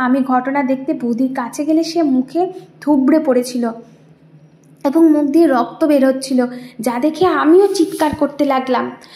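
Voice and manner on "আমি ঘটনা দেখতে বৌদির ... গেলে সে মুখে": ordinary delivery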